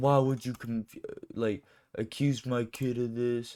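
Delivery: put-on irate, angry father voice, chewing out. Retelling a father cussing out the school, imitating dad cussing out the school. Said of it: "cussing them out".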